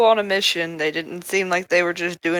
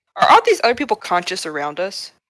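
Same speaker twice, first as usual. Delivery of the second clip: ordinary talk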